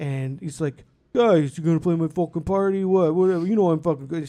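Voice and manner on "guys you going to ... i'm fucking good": terrible put-on New Jersey Italian accent, louder. Quoting a guy asking the group to play his party, terrible New Jersey Italian accent. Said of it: "he talks just like a terrible New Jersey Italian".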